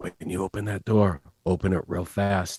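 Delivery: very quiet whisper. Telling another player in character how to open the door: whisper. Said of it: "So I'm gonna whisper to you".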